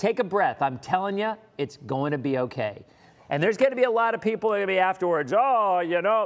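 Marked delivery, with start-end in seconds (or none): 5.4-6.3 scornful, ridiculing, mocking put-on tone. The speaker slips into what he calls his ridiculing voice. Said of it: "that's my that's my my ridiculing voice".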